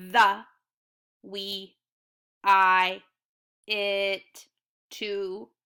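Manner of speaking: loud, very slow, flat monotone robot voice. Showing readers how to practice snap words: robot voice. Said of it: "I would do all of the words in a robot voice".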